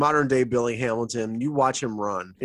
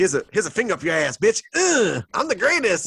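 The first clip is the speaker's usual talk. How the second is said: high, brash, boastful crowing tone; 8 semitones higher, 3 dB louder than usual. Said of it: "why [name] sounds just like [name]".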